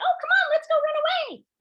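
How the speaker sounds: very high, squeaky, loud cartoon voice. Showing what to say when the animals stiffen up, in a Minnie Mouse voice. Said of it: "put on our Minnie Mouse voice and say".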